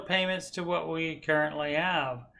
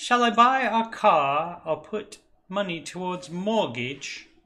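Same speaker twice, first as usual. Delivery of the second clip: fake, hoity-toity posh English accent; 4 dB louder than usual. Reading a submitted question aloud: put-on English accent. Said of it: "I did an English accent".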